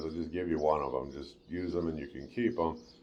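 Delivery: ordinary delivery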